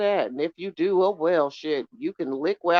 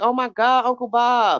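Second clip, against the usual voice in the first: mock high, drawn-out, tearful sobbing cry; 5 semitones higher, 3 dB louder than usual. Retelling forgetting a relative's death, imitating own past crying. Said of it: "I literally started crying in the backyard".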